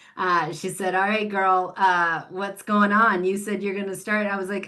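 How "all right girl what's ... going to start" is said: put-on a little touch of a Southern accent. Retelling a phone call from an encouraging friend: Brooke's little Southern accent. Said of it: "with her little Southern accent".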